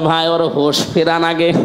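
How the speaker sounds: ordinary delivery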